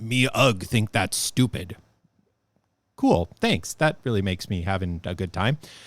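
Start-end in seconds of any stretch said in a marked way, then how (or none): 0.0-1.8 stock, cliched fantasy-game orc voice. Retelling a player who dismissed others' ideas, the speaker does Karen's cliched orc voice. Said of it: "in the most cliched orc voice you've ever heard of".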